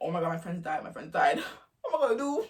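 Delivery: put-on panicked voice, rattled off fast, pitch climbing. Retelling hearing that friends may have died: imitating own past panic. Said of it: "there panicking".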